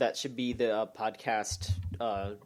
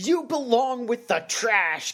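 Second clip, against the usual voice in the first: put-on outraged kid, high, loud furious yell; 11 semitones higher, 7 dB louder than usual. Retelling a kid at a wrestling show, speaker imitates a furious kid. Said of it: "the kid was furious".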